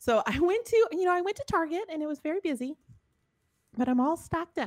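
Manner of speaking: mock grandmother voice. The speaker quotes their grandma, in a Norwegian Minnesotan grandma accent. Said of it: "So that's why I'm talking like that".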